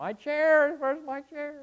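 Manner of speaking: mock shrill, blaring, very high little-kid crying wail. Imitating a little child after the room is rearranged: imitating a crying child. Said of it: "they'll be crying".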